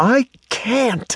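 very high, shrill, hissed voice. A woman under a stagecoach answers a man telling her to get out, hissing. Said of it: "she hissed".

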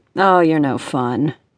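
good-natured, playful teasing tone. A man answers a woman who plans to ration the candy, teasing. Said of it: "Rick teased".

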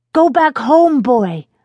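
high, slow, earnest, begging plea. Narrator reads a boy in a hole calling up to his dog, pleading. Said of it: "Alex pleaded with Bucky".

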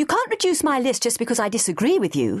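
fierce, high, swooping objecting tone. Fay answers Sophie after Sophie reassigns her patient, fierce. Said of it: "she said fiercely".

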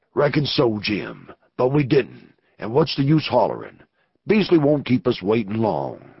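deep, dropped outlaw voice. Reading a novel aloud, the narrator voices a man answering a newcomer: Snake Anson's deep voice. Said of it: "That deep-voiced man below was [name] [name], ... Reckon you're no good for anything but eatin'. ... and I ain't carin' about no fire".

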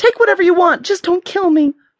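shrill, very high, begging, shrieking. Narrator reads Tish with her hands up: shrieking plea. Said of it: "she shrieked".

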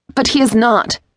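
sharp, high, cutting angry outburst. A woman bursts out in pent-up frustration and rage, sharp raging outburst. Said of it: "making her voice as sharp as the ceremonial blade".

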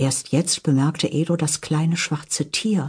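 ordinary delivery

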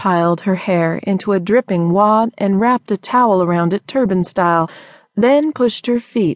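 plain reading voice

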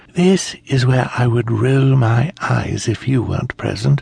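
sly, conspiratorial, confiding tone. A woman speaks to a man who is a perfect stranger, in a conspiratorial tone. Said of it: "she said to him in a conspiratorial tone".

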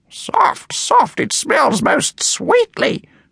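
slow, very high murmur under the breath. Doris, after sniffing an open perfume bottle, quotes Shakespeare, muttering. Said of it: "she muttered".

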